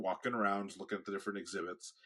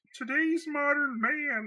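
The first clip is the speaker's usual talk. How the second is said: very high, pushed, frog-puppet-like voiceover voice; 5 dB louder than usual. Showing how the film's voiceover was done: Jordan Peterson impression. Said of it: "as, um, as, uh, Jordan Peterson".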